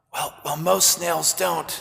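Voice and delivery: soft half-whisper, stumbling on the first words. Retelling your reply to a woman who was half-whispering to you, half-whispering. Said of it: "I too was whispering now".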